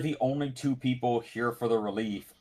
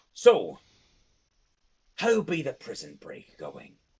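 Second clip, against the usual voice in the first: animated, swooping put-on character voice; 3 semitones lower than usual. In an improvised scene, one player switches into a put-on character voice. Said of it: "changed his voice to the land voice".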